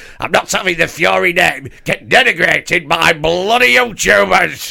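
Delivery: daft, rough-edged, raspy dad voice. Joining the bit about the imagined warning: daft Daddy Fury voice. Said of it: "Daddy Fury's been like".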